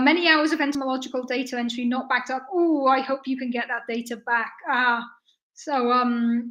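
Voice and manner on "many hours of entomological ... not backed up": plain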